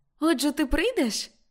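glad, eager, joyful, high-pitched exclaim. Ruth asks him whether he will come; joyful exclamation. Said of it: "радісно вигукнула Рут".

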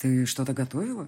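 ordinary delivery, nothing marked

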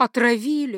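shaky, quavering voice. A wife repeats her husband's word back to him, trembling voice. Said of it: "повторила за ним дрожащим голосом".

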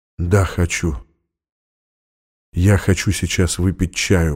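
slow, soft, drawn-out whisper. A man answers a woman who offers him tea: whispered. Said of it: "прошептал он".

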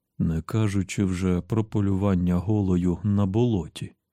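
plain reading voice

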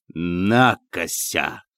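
scornful, dismissive, contemptuous. The general answers the man who burst into his study, with contempt. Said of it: "сказал генерал с презрением".

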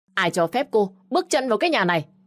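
shrill, loud, hostile scolding shout. A narrator reads the mother-in-law's line as the narrator walks away: shouted loudly. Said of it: "thì mẹ chồng của tôi lại quát lớn".

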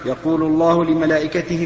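normal talking voice

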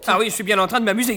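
loud, sarcastic yelled shout. Answering a companion's complaint about his lateness, shouting. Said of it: "ne crie pas si fort".

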